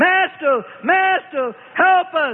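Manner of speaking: panicked, high, terrified screaming cries. Terrified disciples cry out to their master for help: screaming in terror. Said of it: "now all screaming".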